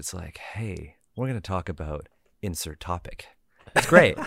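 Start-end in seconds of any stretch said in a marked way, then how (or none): 0.4-3.3 smooth, soft, soothing late-night radio DJ delivery. Praising another speaker's voice by imitating it as a soothing radio host voice. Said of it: "you got a good like soothing voice".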